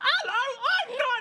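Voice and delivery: very high, very slow, stretched-out squeaky character voice.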